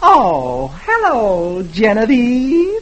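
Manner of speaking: cutesy, cute, high, flirty voice. Dagwood greets Herb through the window, saying it cutely. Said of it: "Dagwood says cutely".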